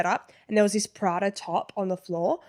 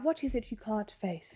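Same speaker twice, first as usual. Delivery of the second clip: very soft, quiet, plummy posh English accent; 10 dB quieter than usual. Describing how TV shows quote a famous line, posh accent. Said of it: "posh like that".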